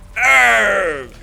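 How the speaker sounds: loud pirate voice, long drawn-out arr. Trying a russian accent for a character, it comes out as an accidental pirate voice. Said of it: "That's that's a pirate".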